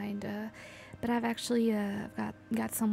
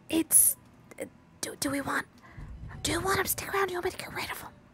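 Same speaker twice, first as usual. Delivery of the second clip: hushed, theatrical stage whisper; 8 semitones higher than usual. A character closes the door, turns around and asks the gang: stage whisper. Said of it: "stage whispers to the gang".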